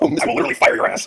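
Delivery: very high-pitched, raspy, rough voice. Playing Vince McMahon being interrupted on a podcast: Vince McMahon impression. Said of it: "Vince McMahon getting interrupted".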